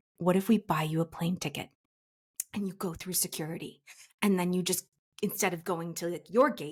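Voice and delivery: ordinary talk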